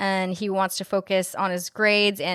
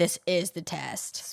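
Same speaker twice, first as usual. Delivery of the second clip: mock darkly foreboding, very ominous tone; 2 semitones lower, 7 dB quieter than usual. Retelling a character's reply about a class project: imitating an ominous tone. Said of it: "in a very ominous tone".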